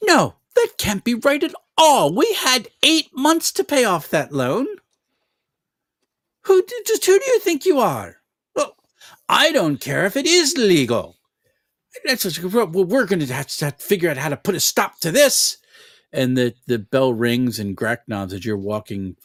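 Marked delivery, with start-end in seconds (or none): 0.0-15.6 very high pitch with a swoop. Voicing a bakery owner's mother arguing about a loan: Salin's mom voice. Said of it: "you can hear the Salin's mom go".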